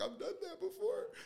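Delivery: put-on weepy crying, very high voice. Recounting their own past reaction, acting out own past crying.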